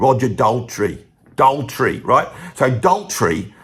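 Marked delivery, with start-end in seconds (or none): 0.0-2.0 London Cockney accent, lower. Talking about [name], the speaker says his name in a Cockney accent. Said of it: "You can't say it without sounding Cockney".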